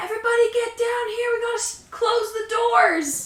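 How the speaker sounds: very high-pitched shouting. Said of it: "I'll yell up the stairs".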